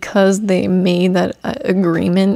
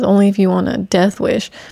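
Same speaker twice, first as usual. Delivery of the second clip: usual speaking voice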